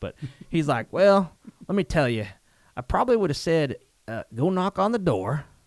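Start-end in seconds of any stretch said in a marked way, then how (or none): 0.9-5.4 put-on Southern farmer accent, raised and higher pitch. Retelling what an old farmer said: imitating a farmer's Southern accent. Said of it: "I'm probably gonna use an accent".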